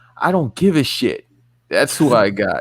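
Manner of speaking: snarky, dripping sarcasm, swooping sing-song tune. Answering who wins the match, announced beforehand: sarcastic. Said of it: "I'm gonna be sarcastic right now".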